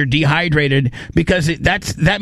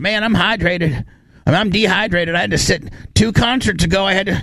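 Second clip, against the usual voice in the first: hillbilly voice, pitched higher. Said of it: "I turned [name] into a hill-, uh, hillbilly".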